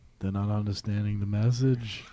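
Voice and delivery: mock sorrowful voice. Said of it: "why do you sound like a young [name]?".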